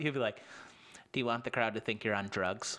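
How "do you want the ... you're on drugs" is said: put-on mean tone. Retelling how a comic criticized the fast talking: imitating someone being mean. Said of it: "really mean about it".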